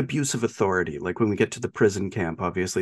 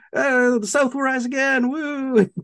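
high mock yell. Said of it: "he yells".

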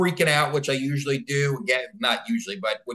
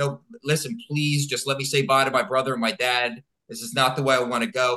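put-on tearful crying voice. Retelling a frightening night, imitating own past crying while pleading. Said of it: "So I start crying and I say".

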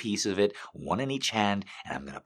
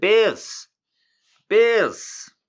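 put-on Chicago accent, much higher, louder; 10 dB louder than usual. Repeating the team names as said before: Chicago accent. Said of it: "I said it with a Chicago accent".

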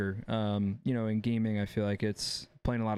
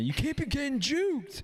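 screamed line, higher pitch. Retelling how a coach screamed at him when he was fifteen: imitating Wes screaming. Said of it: "Wes screaming at fifteen-year-old me".

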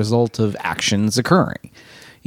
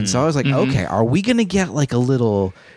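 normal talking voice

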